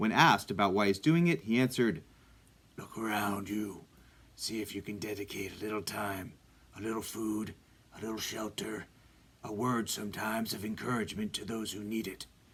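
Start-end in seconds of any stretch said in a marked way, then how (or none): 2.8-12.3 hushed, soft masked superhero voice. Quoting the hero's answer to a question, in a Batman impression. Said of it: "That was my Batman impression".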